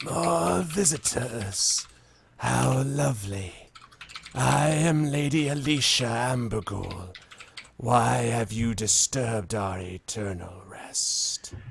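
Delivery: slow, rasping undead woman voice. Voicing a shrouded figure greeting visitors in a tomb: raspy voice. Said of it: "it speaks in a raspy voice".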